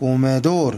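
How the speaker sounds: comedor with the final syllable -dor stressed. Spanish word-stress lesson, showing where comedor is stressed; stress on last syllable of comedor. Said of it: "맨 끝에 모음 뭐예요? 오죠".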